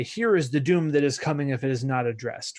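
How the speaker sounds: ordinary delivery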